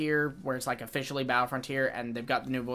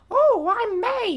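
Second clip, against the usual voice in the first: very high, loud put-on woman's voice; 10 dB louder than usual. Mocking how an actor's character sounds: put-on woman's voice as May. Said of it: "a man doing a woman's voice".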